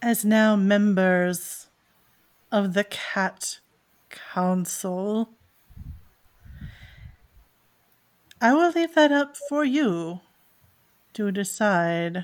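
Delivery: grave, solemn, weighty tone full of gravitas. A game narrator voices a character addressing fellow cat council members, with great gravitas. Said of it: "he says it with a great gravitas".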